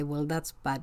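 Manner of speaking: normal talking voice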